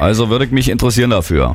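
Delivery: low, gruff, manly fake woman's voice.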